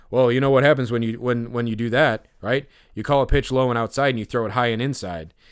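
play-acted, plain, matter-of-fact, no-fuss delivery. Retelling what a pitcher said about sign stealing: imitating a matter-of-fact tone. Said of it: "so matter-of-factly".

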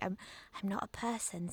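mock overly casual, creepy delivery. Repeating her line, imitating an overly casual, creepy delivery. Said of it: "She says it in this really strange way as well, like overly casually, so that it becomes really creepy".

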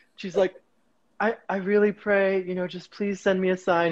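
ordinary talk, nothing marked

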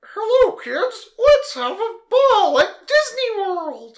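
high, loud, bouncy squeaking voice. Taking turns at impressions with another speaker, trying a Mickey Mouse impression. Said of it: "Here's my Mickey".

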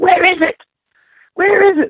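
very high-pitched screaming. Retelling a chase, quoting the mom who skids in: imitating someone screaming. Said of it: "starts screaming".

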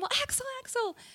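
very high, calling-out yell. Speaker recounts chasing a man across the street for a photo; retelling a yell. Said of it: "started yelling".

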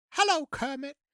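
high cartoon teddy bear character voice. Performing a Pooh Bear and Kermit bit for a fan: Pooh Bear voice. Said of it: "your Pooh Bear and Kermit".

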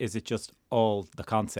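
ordinary delivery

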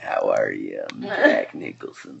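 breathy, hushed, easy film-star voice. Showing the easy young version of a Jack Nicholson impression. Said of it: "that does Nicholson does, like, young Nicholson".

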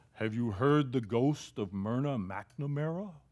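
put-on spooky, scary voice. Retelling how a man with blind eyes tried to frighten listeners, acting out a scary voice. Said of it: "he used a real scary voice".

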